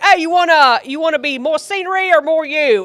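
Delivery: terrible Australian impression. Retelling an australian stranger taking a family picture: terrible australian accent. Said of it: "I'm doing a terrible job here".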